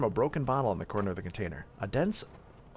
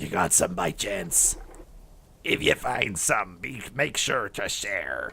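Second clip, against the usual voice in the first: put-on gruff, growly old pirate-like wolf growl; 2 semitones lower, 3 dB louder than usual. Voicing the old wolf in a canine simulator, sounding like a pirate. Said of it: "I sound like a pirate".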